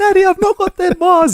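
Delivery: put-on very high, tearful crying little girl voice. Retelling a video where a daughter cries over her bars: imitating a crying daughter. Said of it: "One of them starts crying".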